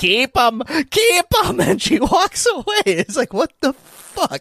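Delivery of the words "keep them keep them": put-on eerie, creepy, insistent old woman's voice. Recounting a stranger at Sunday school pickup, imitating an old lady. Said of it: "And then she's like".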